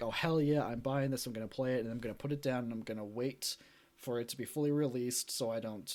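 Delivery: ordinary delivery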